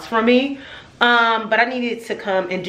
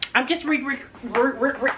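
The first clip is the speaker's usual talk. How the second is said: soft, pitched-up, repeating stutter on re; 5 semitones higher, 5 dB quieter than usual. Vlogger about to show viewers an outfit, stuttering. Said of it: "re I'm stuttering".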